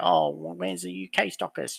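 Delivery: mocking, teasing, high-pitched British accent. Speaker recounting messages from UK customers, mocking imitation of UK customers. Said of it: "your mocking UK people sounded like".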